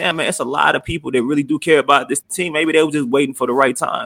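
ordinary delivery

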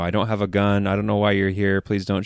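put-on tearful voice, crying while pleading in tone. Retelling a man begging a police officer: imitating a tearful plea. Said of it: "in tears, like, begging the cop".

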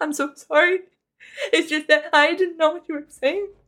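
crying, tearful, gushing, rambling babble. Recounting sitting in the bathroom apologizing to a ghost, acting out past crying. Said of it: "Cried a lot to a ghost, just babbling like".

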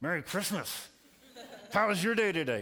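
through clenched teeth. Retelling a greeting said under the table: retelling words said through gritted teeth. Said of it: "with gritted teeth".

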